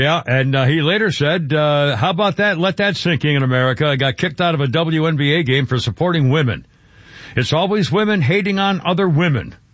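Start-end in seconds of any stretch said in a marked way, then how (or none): none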